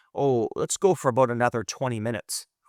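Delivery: ordinary talk, nothing marked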